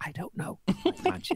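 hushed, conspiratorial, secretive whisper. Retelling how the optician answered a question about the lenses, whispering. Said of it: "Why are you whispering?".

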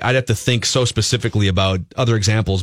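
ordinary talk

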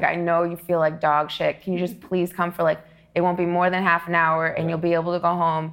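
ordinary talk

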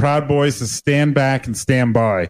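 plain

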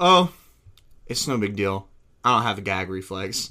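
mock deadpan delivery. Retelling what she said after being warned about choking, imitating her deadpan. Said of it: "she looks at me deadpan".

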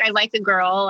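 usual speaking voice

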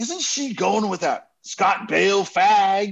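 slow, dead-serious, real serious delivery.

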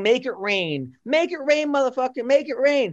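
high-pitched woman's voice, yelling over and over. Retelling a woman heard through the wall: imitating a woman yelling.

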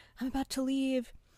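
quiet half-whisper. Retelling someone waking the speaker at night to leave: imitating a half-whisper.

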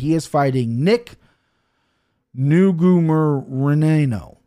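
drawn-out delivery. Naming a fighter's opponent while stumbling over his name, said slowly. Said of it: "I said that so slow".

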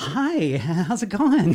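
put-on eager puppy-dog voice. Retelling own past greeting at the office: imitating eager puppy-dog greeting. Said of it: "I was like a puppy dog wandering into the office".

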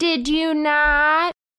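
high pitch, long drawn-out held "not". Recalling how trial lawyers ask questions: Christina Gutierrez impression. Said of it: "That's our Christina Gutierrez impression".

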